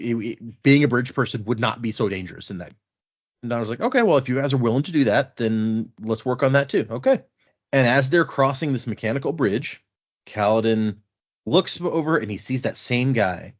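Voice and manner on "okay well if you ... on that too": ordinary talk, nothing marked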